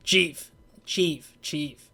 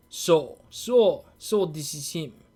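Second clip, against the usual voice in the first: deliberate, very slow fake Russian accent. Trying out a voice for a game character out loud: put-on russian accent. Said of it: "why do I make him Russian".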